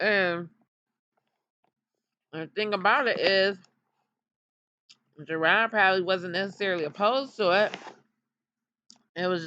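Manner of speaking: speaking with mouth full, chewing mid-sentence. Talking about a man's vasectomy while eating, talking while chewing. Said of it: "excuse me, I'm chewing".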